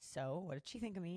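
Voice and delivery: ordinary talk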